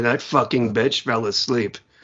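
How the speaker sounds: deep, soothing storyteller voice. Imitating an author at a reading where a listener fell asleep: Neil Gaiman impersonation. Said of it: "that's my Neil Gaiman impersonation".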